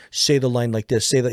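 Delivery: normal talking voice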